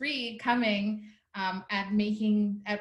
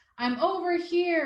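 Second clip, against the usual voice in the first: very echoey, high, booming voice; 8 semitones higher, 3 dB louder than usual. Retelling a dream in which an elder's voice boomed around her: imitating an echoey booming voice. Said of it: "in a very echoey voice".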